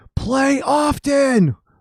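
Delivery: put-on very high, shrill, shrieked yell. Retelling yelling during a quiet piano performance: imitating own past yell. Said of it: "I yelled".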